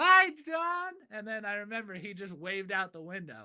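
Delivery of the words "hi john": top-of-the-lungs yelling, very loud and very high. Retelling a memory with their dad, the speaker re-enacts a top-of-lungs yell. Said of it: "I just yelled out like at the top of my lungs".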